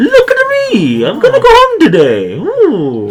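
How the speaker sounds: squeaked out high and slow, poorly done. Showing off a giveaway figure, doing a bad Mario impression. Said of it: "the worst impression of Mario I've ever".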